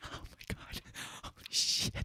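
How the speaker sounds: slow, thrilled, barely audible whisper. Retelling how pranksters act before a prank: imitating excited hushed voice. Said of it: "excited, like, quiet face".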